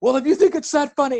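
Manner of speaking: play-acted, high, talking while still laughing. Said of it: "and he's still laughing".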